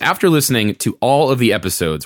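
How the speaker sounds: normal talking voice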